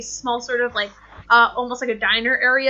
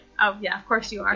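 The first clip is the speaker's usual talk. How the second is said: quiet, hushed, lower voice; 3 semitones lower than usual. Voicing the lady at the table speaking into a jade rock: quiet. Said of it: "then she got this, like, quiet, like, thing".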